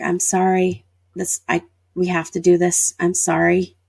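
usual speaking voice

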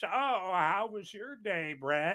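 put-on gentle, sweet, high little-old-lady voice. Imagining a little old lady on a chat screen asking brett, little old lady voice. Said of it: "little old lady ... going".

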